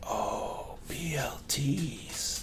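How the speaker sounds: faint, barely-there whisper, very slow and drawn out. Retelling what a man said as he came in, retelling a near-whisper. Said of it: "in this voice that's barely above a whisper".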